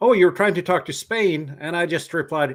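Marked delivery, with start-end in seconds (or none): 0.0-1.6 loud, sarcastic, put-down tone. Retelling what a stranger said in the park: imitating a sarcastic remark. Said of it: "said rather sarcastically".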